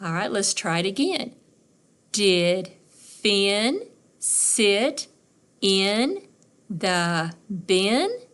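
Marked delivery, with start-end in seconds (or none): 2.1-8.1 rising pitch at the end, on bin. Teaching question intonation with a practice sentence: rising pitch on 'bin'. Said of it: "Did you notice how my voice went up at the end?".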